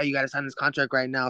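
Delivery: acted-out frantic, rushed, urgent delivery. Retelling how dad urged the contract signing: imitating dad freaking out. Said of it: "my dad, like, freaking out".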